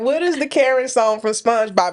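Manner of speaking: ordinary talk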